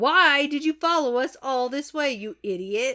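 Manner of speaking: ordinary talk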